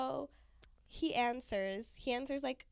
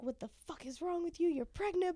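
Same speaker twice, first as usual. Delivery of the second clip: put-on, high-pitched yelling rant; 7 semitones higher than usual. Retelling a phone call from mom: imitating mom yelling. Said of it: "yelling, yelling at me".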